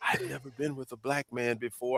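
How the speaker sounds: hushed, very quiet half-whisper. Retelling what an old lady said after he held the door: imitating a half-whisper. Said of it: "she whispered".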